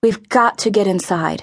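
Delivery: ordinary delivery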